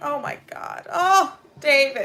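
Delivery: choked up, emotional. Reacting to a documentary speaker's words: getting emotional. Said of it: "I'm getting emotional too".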